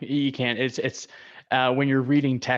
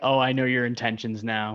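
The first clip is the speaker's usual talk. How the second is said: plain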